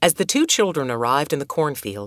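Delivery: ordinary delivery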